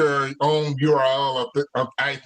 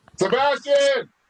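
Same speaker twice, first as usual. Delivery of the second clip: very high, shrill scream; 11 semitones higher, 3 dB louder than usual. Calling someone to come bring a charger, screaming a name. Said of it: "screaming like my mother".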